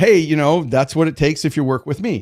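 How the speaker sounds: ordinary delivery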